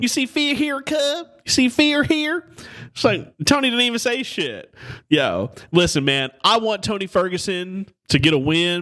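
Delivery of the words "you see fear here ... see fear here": very high, rocker-style taunting voice. Repeating a line after a friend says that is exactly how he sounded, imitating how another man sounded. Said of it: "That's exactly what he sounded like".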